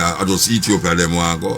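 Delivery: plain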